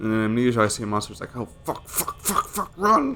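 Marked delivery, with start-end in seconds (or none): 1.4-3.2 high panicked voice, mock sudden fright. Retelling how he reacts to a monster in a scary game: imitating his own panicked voice. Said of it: "that's genuine".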